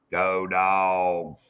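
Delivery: slow South Georgia drawl, Dogs drawn out. Imitating how a friend from South Georgia says it: imitating Hog Leg's slow South Georgia way. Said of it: "Hog Leg says it more like".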